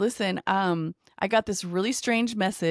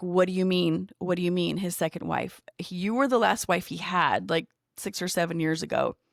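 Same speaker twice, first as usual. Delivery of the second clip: normal talking voice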